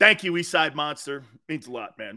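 dripping, insincere, oozing, heavily sarcastic tone. Thanking a commenter by name, oozing sarcasm. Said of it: "Sarcasm oozing".

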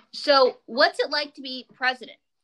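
normal talking voice

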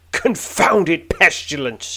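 loud, high-pitched, spiteful snarling outburst. Reading a gamebook aloud, an old man snarls after a collision: snarling. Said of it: "he snarls".

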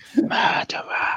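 hushed voice. Calling out from a courtroom audience in character: whispering. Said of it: "a few whispers of murderer".

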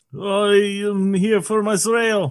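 Israeli accent, spoken very slowly. Answering a request to show an Israeli accent: put-on Israeli accent. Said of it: "What's an Israeli accent like?".

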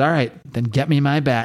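normal talking voice

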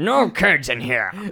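put-on grumpy old man voice, slow and gruff. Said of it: "this voice being like".

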